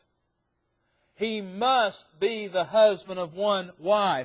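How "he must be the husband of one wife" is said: heavy stress on must, slow and loud. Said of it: "notice the word must".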